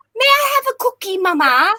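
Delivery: very high, fake put-on English accent. Retelling how he would talk, doing a British accent. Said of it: "British accent".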